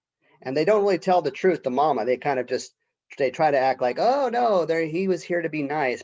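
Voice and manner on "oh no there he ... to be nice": heavily sarcastic tone with put-on niceness. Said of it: "they're so sarcastic about it".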